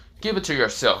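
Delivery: ordinary delivery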